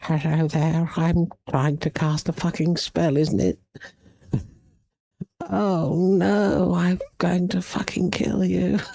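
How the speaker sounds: put-on very high, eerie, creepy English girl voice. Mocking odd anime dub voices, imitating a creepy English accent girl voice. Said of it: "creepy, like, English accent girls".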